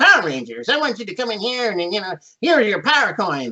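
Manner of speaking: storybook wizard voice. Retelling another actor's interpretation of the same lines, in a wizard type voice. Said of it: "much more of a wizard type voice".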